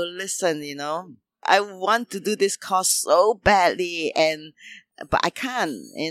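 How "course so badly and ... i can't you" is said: ordinary talk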